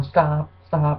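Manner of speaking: ordinary talk, nothing marked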